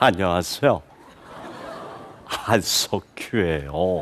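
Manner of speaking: soft, gentle, breathy, put-on near-whisper. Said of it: "그 부드러운 말투".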